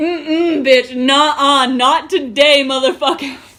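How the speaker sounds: acted-out rage. Retelling snapping after running laps and walking up a hill, acting out past rage. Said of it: "I saw red".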